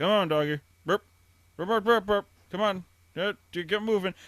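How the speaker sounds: flat, level, matter-of-fact coaxing, no sing-song. Retelling how the dad talks to a dog: imitating Sarah's dad's flat dog talk. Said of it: "he never gets high pitched at all".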